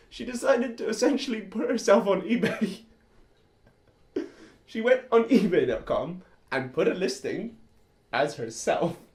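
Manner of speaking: loud, chuckling and laughing through the words. Telling another speaker about an ebay listing, laughing while talking. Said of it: "I'm just laughing thinking about it".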